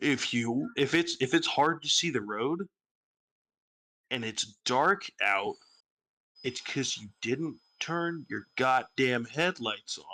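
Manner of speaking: very slow, drawn out, deliberate, word by word. Ranting, the speaker announces it and then says it very slowly. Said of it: "I'm going to say this very slowly".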